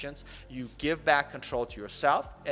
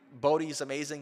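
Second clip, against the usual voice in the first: normal talking voice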